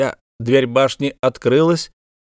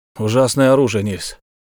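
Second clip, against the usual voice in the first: usual speaking voice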